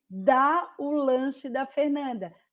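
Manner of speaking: stress on DÁ.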